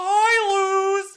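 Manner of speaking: loud, high, squeaky hi, stretched out. Retelling how a cartoon owl's voice came about: Hootie voice. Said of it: "did a funny Mickey Mouse impersonation for Hootie".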